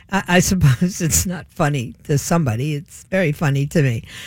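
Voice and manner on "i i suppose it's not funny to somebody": amused, trying not to laugh, chuckle breaking through. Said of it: "I don't even know how to present this without laughing".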